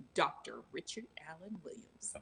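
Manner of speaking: deep, breathy, half-whispered voice. Imitating how a friend announces a doctor's call: imitating Trace's deep voice. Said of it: "he has that deep voice like Richard. He goes".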